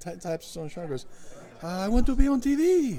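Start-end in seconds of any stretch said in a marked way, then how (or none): 1.6-3.0 put-on Spanish accent, pitched very high and slow. Retelling what a man in a Santa suit said to them, in a Spanish accent. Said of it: "Spanish accent".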